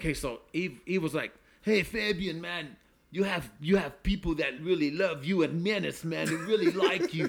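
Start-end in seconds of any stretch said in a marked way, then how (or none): 1.6-7.3 put-on French accent of a man. Retelling what Eve told him in Switzerland: imitating Eve's French accent. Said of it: "That's a pretty good French accent".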